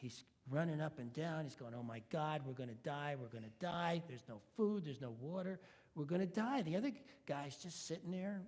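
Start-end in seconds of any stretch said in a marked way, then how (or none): 1.7-6.6 mock frantic, panicky babble, sounding sure of doom. Telling a joke about shipwrecked men, acting out a panicked man. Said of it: "one of them's just flipping out".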